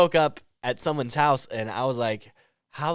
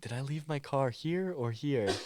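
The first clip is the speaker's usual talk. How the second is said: very quiet, hushed, put-on innocent-sounding voice; 12 dB quieter than usual. Retelling a text the speaker sent asking where the car was: mock-innocent voice. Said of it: "I love you putting on the innocent voice".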